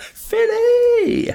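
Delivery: very high, loud, excited Philly whoop.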